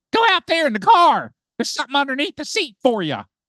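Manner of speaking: loud, very high, swooping hollering yell. Retelling how mother called out about the car: imitating mother yelling. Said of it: "and yells at me".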